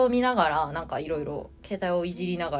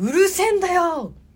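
reenacted shout, much higher and louder; 12 semitones higher, 6 dB louder than usual. Retelling what an older man suddenly said a few stations later: retelling a shout. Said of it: "シャウトです。".

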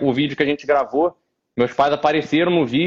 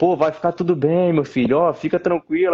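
mock worried, consoling tone. Retelling how worried visitors at the hospital consoled him: imitating worried relatives. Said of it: "a galera chegava lá preocupada".

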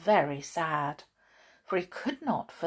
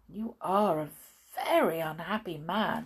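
ordinary delivery

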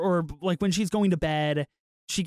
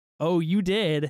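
put-on suggestive tone. Retelling a movie scene, her reply about his dream: imitating a suggestive tone. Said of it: "But, like, in that tone".

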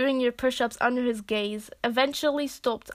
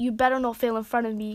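ordinary delivery

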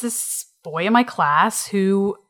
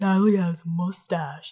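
put-on creepy under-breath mutter, quieter and slower; 2 semitones lower, 4 dB quieter than usual. Retelling what he said behind her at the water fountain, imitating David's creepy muttering. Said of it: "like in a creepy, under his breath voice".

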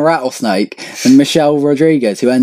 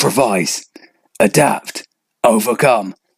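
put-on close-to-mic voice, lower pitch; 4 semitones lower, 3 dB quieter than usual. Mocking a motivational talk by doing Bear Grylls. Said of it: "He just goes really close up to the mic".

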